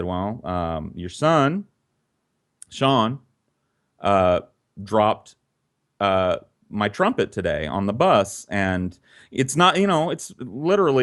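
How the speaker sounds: usual speaking voice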